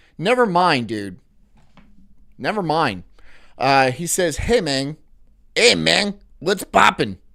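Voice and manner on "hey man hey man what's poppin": put-on Mexican accent. Reading out what someone says, in a Mexican accent. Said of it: "I had to say that like a Mexican".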